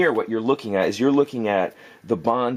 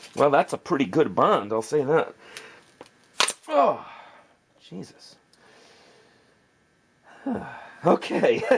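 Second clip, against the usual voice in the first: winded, out-of-breath, breathless talk; 4 semitones higher than usual. Testing a glued bond by hand, out of breath. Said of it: "Let me catch my breath on that".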